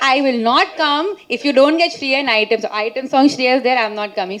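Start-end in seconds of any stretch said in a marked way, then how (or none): none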